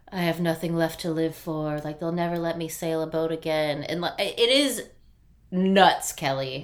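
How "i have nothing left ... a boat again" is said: put-on grumbling mutter under the breath. Telling Kelly about a rescued man, the speaker acts out his muttering under his breath. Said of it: "muttering under his breath like".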